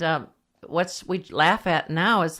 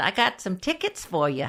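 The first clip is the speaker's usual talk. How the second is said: put-on chummy, buddy-like voice in a Massachusetts accent; 2 semitones higher than usual. Retelling what a football player told a police officer: Bill Quinlan's Massachusetts accent. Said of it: "he talked with that Massachusetts accent".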